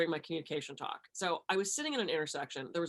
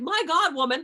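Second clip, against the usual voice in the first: mock yelling, higher pitch and louder; 10 semitones higher, 9 dB louder than usual. Retelling being stuck behind a car at a stop sign: imitating own yelling. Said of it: "I'm yelling at this woman in the car".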